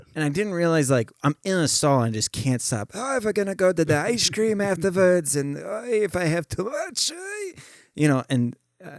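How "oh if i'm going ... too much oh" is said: odd, weird put-on Yiddish accent, high-pitched. Speaker re-enacts chattering away in a bathroom stall; weird Yiddish accent. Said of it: "just doing this like weird Yiddish accent".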